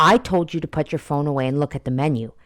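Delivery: put-on harsh scolding voice. Retelling a video where a grandpa scolds his granddaughter: imitating a mean scolding. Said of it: "very meanly".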